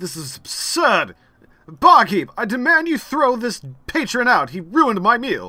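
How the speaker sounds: loud, high, indignant nobleman voice raising a fuss. A nobleman with soup on his trousers addresses the barkeep, causing a huge scene. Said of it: "is just causing a huge scene".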